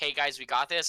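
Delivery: ordinary talk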